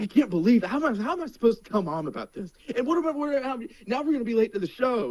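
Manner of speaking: acted, high, furious, flipping-out yelling. Retelling how his dad reacted while getting a ticket, imitating dad's angry yelling. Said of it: "cussing and like yelling".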